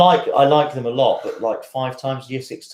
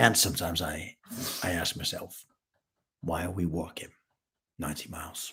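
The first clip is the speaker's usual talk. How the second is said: very low, deep, quiet, hushed put-on American accent; 7 semitones lower, 14 dB quieter than usual. Speaker showing off an accent to the others, in a deep American accent. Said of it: "this is my American accent".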